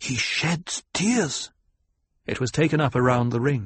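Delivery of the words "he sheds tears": high, swooping hissed voice. Narrating a voice in the circle as he sinks to the floor, hissed. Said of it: "A voice hissed".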